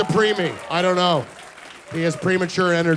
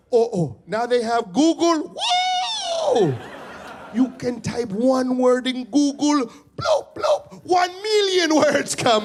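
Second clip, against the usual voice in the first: high, slow sing-song with stretched "whoa"; 7 semitones higher than usual. Retelling his dad discovering Google, imitating his Haitian dad's voice. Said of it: "I can't do my dad's voice".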